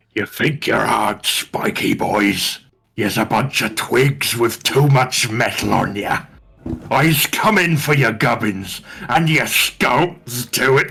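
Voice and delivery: exaggerated, over-the-top taunting put-on voice. Player says what his character tells the ones receiving his hails; over-the-top character voice. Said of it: "too much doing the voice".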